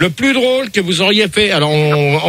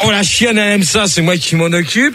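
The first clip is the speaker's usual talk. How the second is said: usual speaking voice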